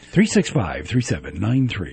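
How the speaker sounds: low, soft announcer-style read. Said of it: "That's an announcer voice".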